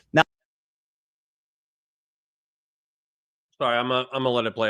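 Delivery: speaking with mouth full, chewing while talking. About to play a clip, the speaker talks while still chewing. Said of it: "I'm still chewing".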